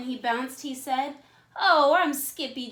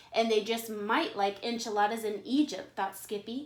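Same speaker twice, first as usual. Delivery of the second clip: plain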